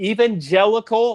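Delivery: heavy stress on evangelical, punched high and loud. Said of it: "stress the word evangelical".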